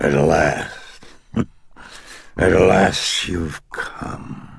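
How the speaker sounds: very slow, croaking demon voice. Reading the demon's words to the old priest, in a croaking demonic voice. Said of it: "the demonic voice croaked".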